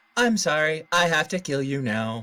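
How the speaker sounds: robotic gun turret voice. Quoting the turrets from Portal: Portal turret voice. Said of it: "Preferably with the Portal turret voices".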